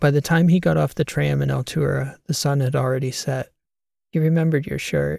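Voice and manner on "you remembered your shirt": quick, playfully teasing tone. A woman greets a man as he gets off the tram, teasing. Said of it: "she teased him".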